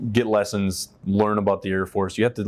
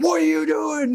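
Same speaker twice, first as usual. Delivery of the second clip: mock furious, shrill bark, very high-pitched. Recalling his first week of training, imitating a man who screamed at him; retelling a scream. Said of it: "Screaming at me".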